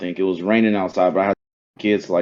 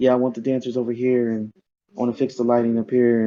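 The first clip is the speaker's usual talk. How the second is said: quiet, gentle speech; 3 semitones higher than usual. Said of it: "Michael just talking soft voice".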